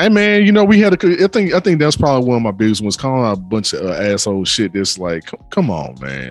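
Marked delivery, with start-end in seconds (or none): 5.3-6.3 slow, disappointed, chiding parent-like tone. Complaining about others' bad behavior: disappointed parent tone. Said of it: "Why [name] sound like a disappointed parent?".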